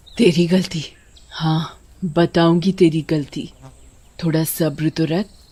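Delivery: vengeful ghost-witch character voice. In a cartoon story, the witch answers Bhima: headless vengeful witch voice. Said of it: "चुड़ैल का सर चुड़ैल के हाथ में होता है। / वो इंसानों से अपना बदला ले रही है और ये चुड़ैल टंकी के चौकीदार की बेटी है। उसे कुछ दिन पहले कुछ दरिंदों ने मार डाला था और उसकी गर्दन काटकर उसकी लाश टंकी में ड".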